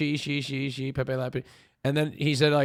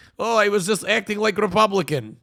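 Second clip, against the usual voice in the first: put-on Turkish accent, leaning Russian, pitched up; 7 semitones higher, 5 dB louder than usual. Retelling what he said, in the speaker's closest attempt at a Turkish accent. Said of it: "that's the closest I can do to Turkish accent".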